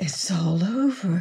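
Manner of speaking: soft whispered words. Narrator reads a stricken woman's words to a man, a whisper. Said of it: "she heard her voice whisper".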